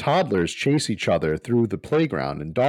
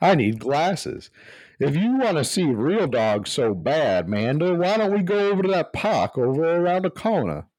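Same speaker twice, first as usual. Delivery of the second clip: put-on Louisiana accent, pitched up; 6 semitones higher than usual. In an improvised scene, suggesting a trip to the park: Louisiana dad voice. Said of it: "my Louisiana dad voice".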